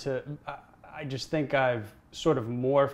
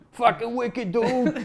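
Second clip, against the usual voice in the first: put-on raised-pitch Boston accent; 9 semitones higher, 4 dB louder than usual. Describing how people talk at Celtics games, imitating their Boston accent. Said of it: "Like what's the accent?".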